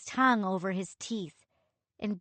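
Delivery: plain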